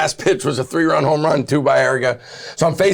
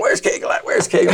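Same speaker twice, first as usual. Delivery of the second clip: strong, deep put-on Louisiana accent; 2 semitones higher than usual. Retelling what a catcher from Louisiana called out after a rough play, in a deep Louisiana voice. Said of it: "In this deep Louisiana voice".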